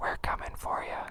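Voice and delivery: very quiet, breathy whisper close to the mic. Showing viewers how a mic picks up his voice, right up close to the mic. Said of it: "I can get real close to the mic like this and say".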